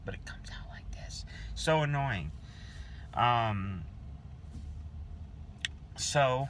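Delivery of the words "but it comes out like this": quiet whisper, getting quieter. Vlogger showing how the bad audio makes their voice come out, quiet whisper. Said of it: "just like I'm whispering like this".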